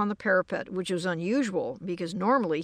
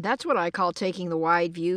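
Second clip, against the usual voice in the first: ordinary delivery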